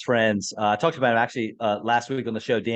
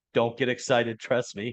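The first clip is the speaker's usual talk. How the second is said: ordinary talk, nothing marked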